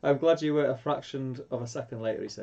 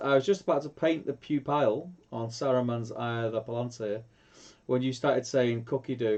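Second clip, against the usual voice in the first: normal talking voice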